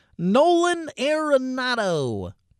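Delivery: cheesy, swooping announcer call, name drawn out. A host listing baseball players, saying a name again: cheesy baseball play-by-play voice. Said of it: "in that cheesy baseball play-by-play voice".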